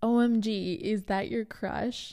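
booming, loud, drawn-out exclamation. Retelling a dad's remark about a crush: imitating someone saying it loudly. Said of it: "says very loudly".

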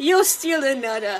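put-on New York mob accent. Acting out how a kid suddenly talks, imitating new york mob accent. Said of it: "that's how he talks".

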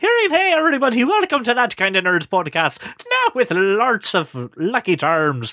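over-the-top Irish accent, sing-song. Podcast welcome contrasting mumbly real Irish with: stereotypical Irish accent. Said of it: "very stereotypical Irish, not real Irish ... That's more fun".

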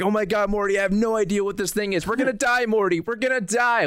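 acted-out, very high, frightened panicking voice. Retelling a scene where Rick is chased by a monster, mock-scared Rick impression. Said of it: "he's like just scared of this monster".

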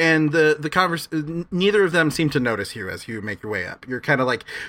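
plain reading voice

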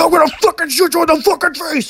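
very high, loud, shrieking yell. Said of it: "the guy that Harvey Dent's like".

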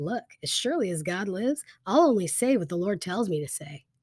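usual speaking voice

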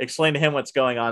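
normal talking voice

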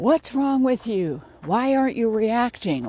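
put-on high-pitched screaming. Speaker retells their mother turning to them in the car: retelling mother's screaming. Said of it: "started screaming".

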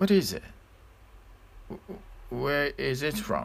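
shocked and inquisitive. First-person narrator asks where a ring came from, shocked and curious. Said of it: "I inquired with shock and curiosity".

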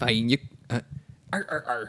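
put-on gruff crab sailor voice. Warming up to voice Mister Krabs again: Mister Krabs voice. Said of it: "He's gotta do his warm-up exercises".

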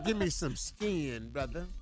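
mock pimp character voice. Speaker offering another line to the group, in a pimp voice. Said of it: "Why you gotta say it in the pimp voice?".

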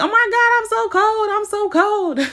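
very high, very loud, shrill scream. Speaker retelling waking up and screaming, acting out the scream. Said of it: "screaming like".

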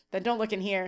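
normal talking voice

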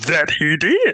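playful, high, put-on creature voice. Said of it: "Why are you trying to sound like Yoda?".

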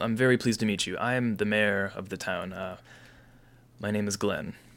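dwarf woman character voice, defeated but glad. Narrating a game, voicing the dwarf woman mayor meeting new faces, defeated but glad. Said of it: "her demeanor is that she's defeated, but is sort of happy".

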